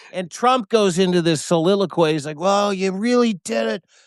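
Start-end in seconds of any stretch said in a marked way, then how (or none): 2.4-3.8 put-on frail, weak, near-death voice, pitched up. Retelling a speakerphone call, imitating Trump sounding like he's dying. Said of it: "he sounded like he was dying".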